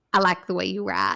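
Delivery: put-on thick Southern accent. Retelling what a man said on meeting a writer, in a thick Southern accent. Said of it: "he has a thick Southern accent".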